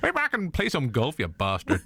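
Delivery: high put-on voice with swooping pitch. Showing the others how to just go with the voice, doing a Joe Pesci impression. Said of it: "that's how you just go with this voice".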